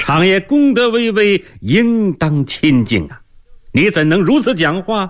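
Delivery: barked, shrill stern shout, pitched very high. Li Shi rebukes Zhou Shunchang for refusing to bow, shouting a rebuke. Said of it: "李石喝道".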